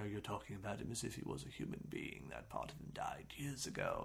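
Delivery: hushed, breathy, badly done put-on doctor voice. Quoting a franchise line to end the episode, doing a bad Dr. Loomis impression. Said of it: "that's a bad Loomis impression".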